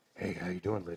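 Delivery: creepy, unsettling voice. Retelling teenage prank calls to people: creepy stalker voice. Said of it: "creepy stalker voice".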